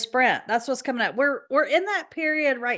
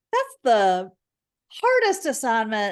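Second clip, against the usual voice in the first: heavy sarcasm with swooping pitch. Joking about a cushy Olympics surfing assignment in Fiji: heavy sarcasm. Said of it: "I say with the most sarcasm".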